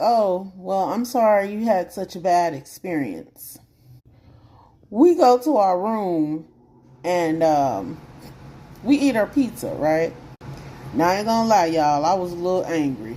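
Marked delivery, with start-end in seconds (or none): 0.0-3.6 put-on self-satisfied, smug delivery. Retelling the hotel clerk's reply to a complaint: imitating a smug clerk. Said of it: "He gets kinda smug and he's like".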